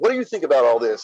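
plain

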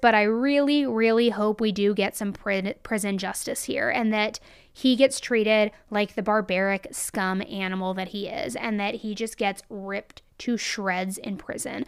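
ordinary talk

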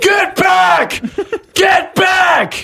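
piercing, very loud, slow, drawn-out shrill scream. Retelling how the king broke character over the p a: imitating a scream. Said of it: "he just screamed in the P A".

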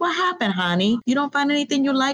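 put-on heavy Polish accent. Retelling a story about a bar owner speaking to a young woman: thick Polish accent. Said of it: "she had a thick accent".

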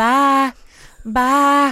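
put-on Southern drawl. Retelling how she now says bye, speaker imitates her real Southern drawl. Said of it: "she says it with a real Southern drawl".

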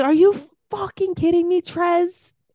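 sky-high, flipped-out, furious angry outburst. Retelling a reality show scene, imitating Aisha flipping out. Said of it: "Aisha flips out".

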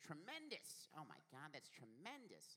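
high, swooping exclamation. Imitating a friend's catchphrase: imitating Leif's higher voice. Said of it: "he has a kind of a higher voice".

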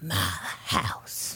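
sneering, breathy whisper, barely audible. Retelling a scene with a teetering man, imitating a sneering whisper. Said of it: "sneering and whispering".

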